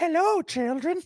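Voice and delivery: put-on pleasant Irish accent, pitched very high. Riffing on a character aboard the Polar Express, speaking in an Irish accent. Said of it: "with a nice Irish accent".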